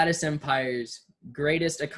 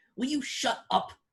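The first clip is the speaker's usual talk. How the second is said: put-on female voice, much higher pitch, quieter; 9 semitones higher, 4 dB quieter than usual. Retelling a voice heard from behind telling someone to shut up, imitating a female voice. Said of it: "it's some female voice".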